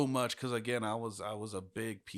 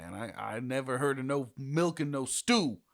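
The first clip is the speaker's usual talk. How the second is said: full, loud, put-on New York accent; 4 semitones higher, 6 dB louder than usual. Riffing in conversation, slipping briefly into a New Yorker accent. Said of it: "I don't know why I went all New New Yorker there".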